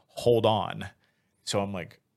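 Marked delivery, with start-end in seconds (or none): none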